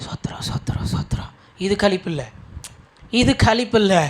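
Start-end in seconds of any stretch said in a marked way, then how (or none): 0.0-1.3 quiet mumble under the breath. Speaker mocks praise mumbled like a fish, saying it in a quiet mumble. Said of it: "சும்மா அந்த மீன் முணு முணுக்கிற மாதிரி".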